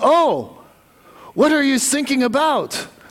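put-on Russian accent. Telling a joke, voicing the man who answers a mayday call, in a Russian accent. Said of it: "that's my Russian accent".

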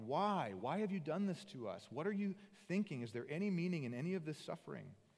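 anguished, all-emotion outcry. Retelling Moses crying out to God, retelling Moses yelling at God. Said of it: "yelling at God".

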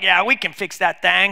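put-on weak, strong Boston accent. Recalling a guy on This Old House, failed Boston accent. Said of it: "a guy with a really strong Boston accent who was always like".

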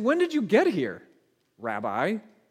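acted-out annoyed, frustrated tone. Retelling the crowd's words on catching up to him, acting out annoyance. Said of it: "you can hear the annoyance in their voice".

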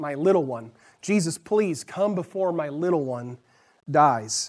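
desperate, pleading, near-begging voice. Retelling the desperate man's plea to Jesus: imitating someone almost begging. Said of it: "kind of like almost begging".

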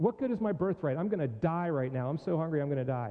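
acted flippant manner. Retelling Esau's reply when asked to sell his birthright: mock-flippant Esau.

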